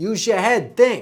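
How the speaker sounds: Bronx accent, think as tink. Teaching accent sounds, demonstrating a sample phrase in a New York accent. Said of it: "Think becomes think".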